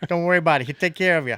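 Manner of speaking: New York police officer voice. In conversation, vouching for a man named Lane Mosul in a New York cop voice. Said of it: "Why did you sound like a New York cop then?".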